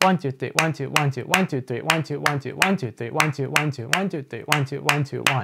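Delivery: fast, rattled-off delivery, straight through. Showing how the third seven-beat clave sounds faster: counting faster. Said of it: "Faster like this".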